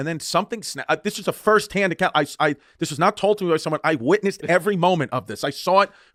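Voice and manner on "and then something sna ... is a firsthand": ordinary delivery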